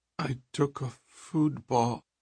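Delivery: mumbled, high, hesitant, words barely let out. Reading a story aloud, Trit answers Lawston: mumbled. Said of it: "Trit mumbled".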